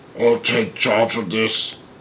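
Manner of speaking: deep, rough, rasping, very soft hushed voice. Reading a story, the narrator voices a stranger cutting in on Shanks: deep, rasping voice. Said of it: "said the deep, rasping voice".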